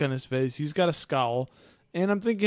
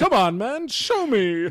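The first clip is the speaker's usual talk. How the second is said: put-on cheesy villain voice, higher; 7 semitones higher, 4 dB louder than usual. Imitating a movie villain harassing a guard: imitating John Travolta's line delivery. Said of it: "seriously, that's the line delivery".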